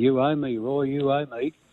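play-acted pointed call, slow and drawn out. During a race, after being pushed out of the way, the speaker is retelling a yell to another rider. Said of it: "and I yelled out to him".

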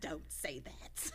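badly done hushed whispered character voice. Acting out Tabitha's reply in a scene with Timmy: terrible Tabitha impression. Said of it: "That's a terrible Tabitha again".

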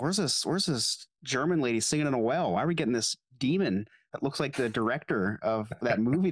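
usual speaking voice

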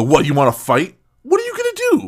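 high, sing-song, jeering, goading mocking taunt. Describing people who come back around after messing with you, retelling a mocking taunt. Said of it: "they come back around mockingly and go".

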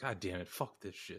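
mock-defeated character voice. Discussing the film sequel, a speaker acts out the lead, imitating a defeated Joker. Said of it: "He's like".

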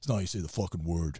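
put-on hard-hitting, emphatic delivery in New York accent. Retelling how a wrestling friend challenged a word, in Bubba Ray Dudley's New York accent. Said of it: "in his New York".

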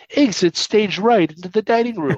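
bad cartoon lion voice, high. Retelling a man waiting for a table answering the hostess, bad Snagglepuss impression. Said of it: "does this bad Snagglepuss impression and goes".

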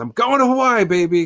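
put-on thrilled, very high, loud excited exclamation. Acting out a store owner shouting to the world as he leaves: excited. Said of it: "so excited".

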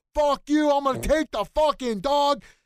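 very high, shrill, all-out screaming. Retelling a passenger cursing at his girlfriend: imitating someone screaming in a fight. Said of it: "they're screaming at each other".

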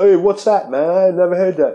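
cheap fake British accent. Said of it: "that's my fucking cheap-ass UK accent".

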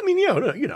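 high-pitched sarcastic "you know".

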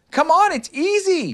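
tiny, very high squeaking voice. Roo calls to Tigger, who is edging along his branch, squeaking. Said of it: "squeaked Roo".

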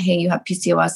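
ordinary delivery

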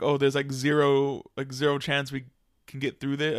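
plain

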